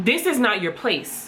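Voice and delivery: ordinary talk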